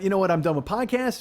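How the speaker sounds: usual speaking voice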